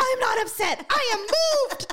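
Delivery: really passionate, high, slow, grand stage-speech delivery.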